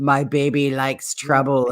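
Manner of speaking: creepiest, eerie, sinister and unsettling voice. Reading nonsensical rubbish aloud, creepy voice. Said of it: "in the creepiest voice".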